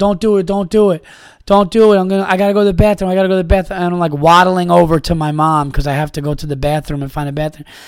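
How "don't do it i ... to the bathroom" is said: mock begging, higher pitch. Recalling being five or six, begging a brother to stop, imitating childhood begging. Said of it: "I'm begging my brother".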